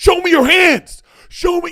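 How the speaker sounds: very loud, very high-pitched, barked yelling. Retelling body cam footage of an officer ordering a driver, retelling a yelled command. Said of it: "He's yelling at him".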